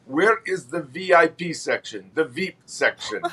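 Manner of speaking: put-on slow, drawn-out Russian accent. Retelling a visiting guest's question on a prison tour: deep Russian accent. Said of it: "in that deep Russian accent".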